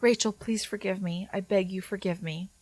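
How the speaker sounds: soft, gentle, almost ethereal airy voice. Retelling what a man said while kneeling before a woman: soft, almost ethereal voice. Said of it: "he said in an almost ethereal, soft voice".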